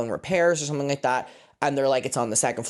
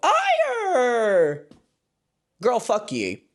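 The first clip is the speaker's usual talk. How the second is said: obnoxious put-on American accent, very high, swooping; 10 semitones higher than usual. Retelling an awkward exchange, in an obnoxious put-on american accent. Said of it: "I put on the most obnoxious American accent".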